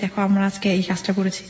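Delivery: ordinary talk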